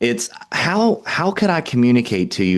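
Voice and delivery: nurturing, gentle, caring, confused, puzzled delivery. Speaker demonstrates tonality for a question to a listener, nurturing, confused tone. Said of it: "like you're confused".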